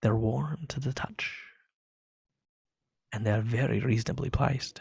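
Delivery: close, quiet whispering. Voicing a dwarf merchant leaning in close to a player: whispering merchant. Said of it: "he leans in to whisper in your ears".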